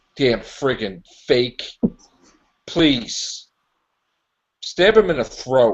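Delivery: really mad. Reacting to a character on screen, really mad. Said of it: "I'm just, like, really mad".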